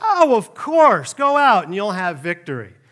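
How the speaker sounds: loud, thick, heavily sarcastic tone. Retelling a prophet's answer to the king: imitating a sarcastic reply. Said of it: "he's really sarcastic".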